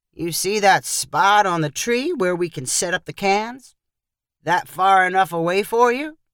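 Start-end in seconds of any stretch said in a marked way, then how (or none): none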